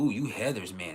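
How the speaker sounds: acted-out sly, knowing, insinuating tone. Retelling how a new coworker first spoke to him: imitating a sly tone. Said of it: "saying it with a sly".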